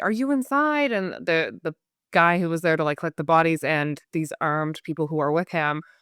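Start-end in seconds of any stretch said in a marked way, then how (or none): 0.0-0.9 woman's high, calling yell. Retelling how a woman arrived at the house, imitating her yelling. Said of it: "she's yelling like".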